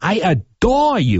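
put-on thick Cape Cod accent. Imitating your grandmother greeting the children with kisses, in a really thick Cape Cod accent. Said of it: "with that really thick Cape Cod".

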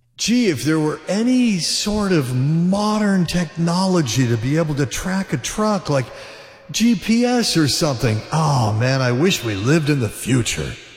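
dry, deadpan, sarcastic mock wonder. Show host reacting to stolen trucks not being found, sarcastic. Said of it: "That's sarcasm".

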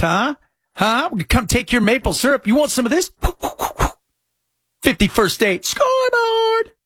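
put-on sarcastic bragging, high and swooping. Joking about the trade battle with the Canucks: mock gloating, sarcastic. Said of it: "I think you're being, uh, sarcastic".

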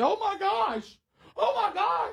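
very high, startled, drawn-out scream. Recounting how she suddenly screamed while they carried something outside; retelling a scream. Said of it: "she screams".

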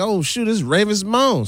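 sudden, flustered, high-pitched panic. Retelling meeting a celebrity at a conference: retelling own past panic. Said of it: "I'm panicking like".

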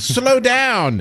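very high, squeaky cartoon voice. Acting out a radar that speaks in Stewie's voice: Stewie voice. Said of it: "Stewie's voice saying".

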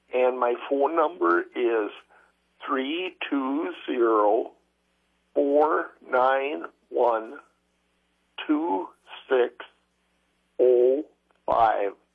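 slow, deliberate. Caller to Farmers Market giving their phone number, slow and deliberate. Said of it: "You did a good job reading it slow".

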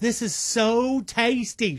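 put-on Southern accent, woman's voice. Retelling what a woman in a recipe video said: imitating a Southern woman. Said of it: "She's a Southern woman".

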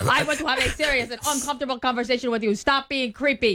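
stiff, robot-like voice. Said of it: "they kind of talk like this".

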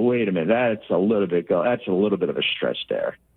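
ordinary talk

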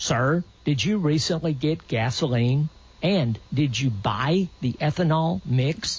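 ordinary delivery

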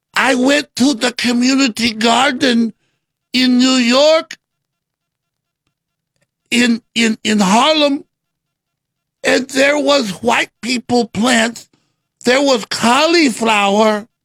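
put-on Spanish accent.

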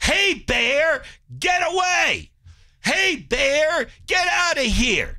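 very high-pitched, very slow, drawn-out hollering. Telling a camp story, imitating the man who didn't like you yelling. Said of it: "he starts yelling".

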